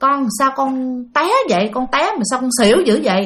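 plain reading voice

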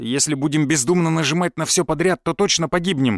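ordinary delivery

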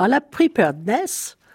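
preparedness said with a slight, lightly anglicized English accent. Discussing epidemics, the speaker says an english term with a slight english accent. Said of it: "en essayant d'avoir un petit accent anglais".

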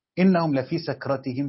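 ordinary delivery

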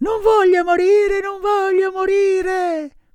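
very high, shrill, struggling scream. Pinocchio, struggling as he is brought forward, screaming.

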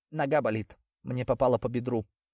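plain reading voice

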